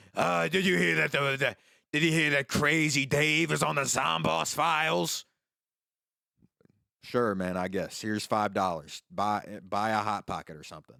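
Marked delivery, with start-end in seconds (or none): 0.2-5.3 rough, creaky, rambling drifter voice. Retelling what a one-toothed man said to him, imitating a one-toothed guy. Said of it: "a guy with one tooth and a singular boot".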